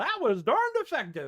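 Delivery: exaggerated put-on American accent. Showing the most American accent possible: exaggerated American accent. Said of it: "about as American as I can do it".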